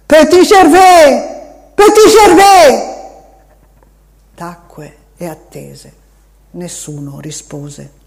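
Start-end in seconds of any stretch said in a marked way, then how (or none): 0.1-2.9 very loud, high, full-force shout. Narrator reads a man who stopped and saw nothing, shouting with all his strength. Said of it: "gridò con tutte le sue forze".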